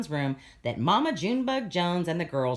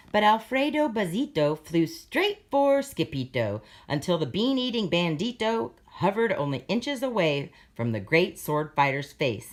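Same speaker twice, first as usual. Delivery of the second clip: plain reading voice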